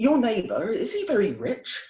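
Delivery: put-on West Country accent, sing-song and high. Retelling what the public prosecutor at court asked him, in a West Country accent. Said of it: "is a West Country accent".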